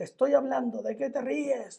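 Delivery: high, furious, hateful demon voice. Retelling an exorcism where he glared at you with hatred; imitating someone furious. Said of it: "enojadísimo".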